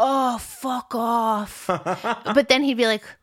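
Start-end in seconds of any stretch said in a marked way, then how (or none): 0.0-1.7 bad Irish accent, higher and slower. Retelling daily calls where Joey answered the phone; terrible Irish accent as Joey. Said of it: "sorry for my accent. It's terrible".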